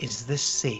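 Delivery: hushed, low, breathy whisper, close to mic. In a role-play, a player leans in close to a character, whispering. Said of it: "I'm gonna whisper to him".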